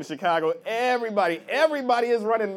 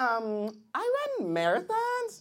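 put-on high, soft girlish voice.

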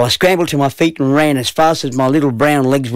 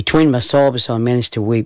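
ordinary delivery, nothing marked

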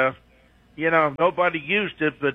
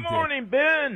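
bright, upbeat, cheerful and very high; 11 semitones higher than usual. A caller greets the show's host, happy, in a good mood. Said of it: "You sound like you're in a good mood".

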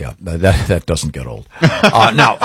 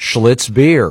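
ordinary talk, nothing marked

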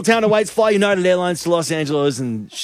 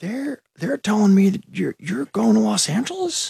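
put-on whispery, laid-back voice; 3 semitones higher than usual. Calling a winner on the radio as Owen Wilson: Owen Wilson impression. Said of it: "it's Owen Wilson".

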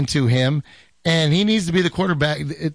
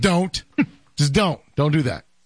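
stern parental "don't" voice, faster. Showing the voice used as a father, father's 'don't' voice. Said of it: "that's my don't voice".

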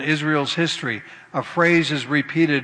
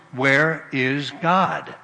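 slightly louder, much slower voice. Telling a joke, the principal asks the silent boy again, a little louder. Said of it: "a little louder voice".

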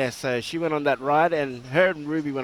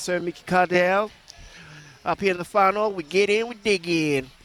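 put-on country accent; 4 semitones higher than usual. Asked for their best country voice, the speaker answers in a country voice. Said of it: "as I do mine".

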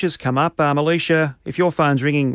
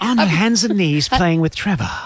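breathy narrator voice, like a nature documentary. Asked for a David Attenborough voice, continuing the narration about Jade: David Attenborough voice. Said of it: "That's actually pretty good".

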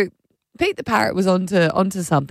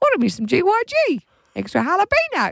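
put-on pet parrot voice, pitched higher; 12 semitones higher than usual. Retelling the parrot ordering snacks through Alexa: imitating Pete the parrot. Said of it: "And then he gives it".

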